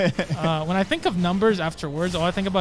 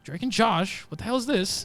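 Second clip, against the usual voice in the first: ordinary talk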